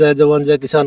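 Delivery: ordinary talk, nothing marked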